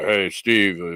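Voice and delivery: put-on radio announcer voice. Retelling a greeting from an interview, in a radio announcer voice. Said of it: "But I'm doing radio voice guy".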